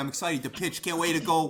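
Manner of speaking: put-on thick, sleazy Philadelphia lowlife accent. Describing a man's voice, the speaker imitates him in a philly scumbag accent. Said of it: "like incredible like Philly scumbag accent".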